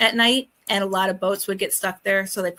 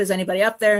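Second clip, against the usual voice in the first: ordinary talk, nothing marked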